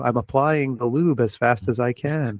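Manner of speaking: calm, computer-like voice. Describing a talking machine in a movie: HAL 9000 voice. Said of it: "a Douglas Rain Hal nine thousand voice".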